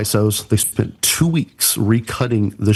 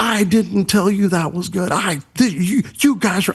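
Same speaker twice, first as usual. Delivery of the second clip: mock screaming, much higher; 8 semitones higher than usual. Recounting how she denied approving the graphics, imitating someone screaming. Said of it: "she'd start screaming".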